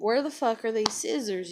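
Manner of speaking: mock angry outburst, cursing. Retelling searching for missing scissors: imitating own angry words. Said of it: "I'm mad now".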